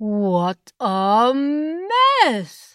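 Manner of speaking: gasping outcry, exclaimed with a gasp. Narrator reads Gior reacting as the screen door bangs shut, exclaiming with a gasp. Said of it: "exclaimed Gior".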